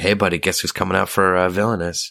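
plain

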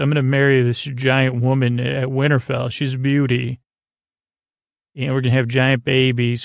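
ordinary talk, nothing marked

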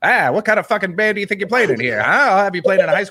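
put-on angry old-fashioned film voice. Imitating a man who talks like old movies, quoting him: old-movie voice. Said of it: "He's even got that sort of like movie voice".

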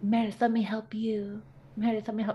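breathy whisper, put on. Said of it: "She sounded kind of like [name] whisper voice".

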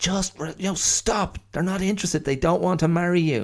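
mock, very high-pitched, shouted scolding tone. Retelling what a daughter shouts at the rooster: imitating daughter shouting. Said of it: "she just shouts at the rooster".

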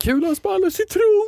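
high, mock terrified scream. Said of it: "du blir så rädd att du skriker".

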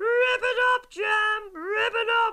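put-on very high, loud screaming, like teenage fans.

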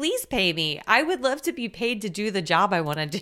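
ordinary talk, nothing marked

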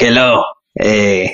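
put-on speaking in a Latin American accent. Voicing a cat's imagined internal monologue: Latin American accent. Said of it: "internal monologue is like, you know, Latin American".

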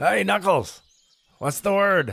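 calling out loudly. Heading back to the inn, calling out to knuckles, shouting across a distance. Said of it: "Are you shouting this across?".

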